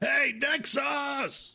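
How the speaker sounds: very high shout, as if calling far off. In a game scene, calling out to another character at the tavern: screaming across the tavern. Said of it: "And I'll like scream at the tavern".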